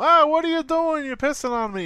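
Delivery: piercing, very high, loud outburst. Retelling a dream about a sitcom scene: Jerry Seinfeld voice. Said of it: "in his stupid, you know, Jerry Seinfeld voice".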